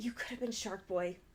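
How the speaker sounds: soft, heavy, acted-out disappointment. Retelling how someone reacted when a partner did something wrong, mock very disappointed, not yelling. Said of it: "not yelling, but just like, just in a very disappointed voice".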